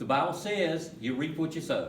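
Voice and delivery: ordinary talk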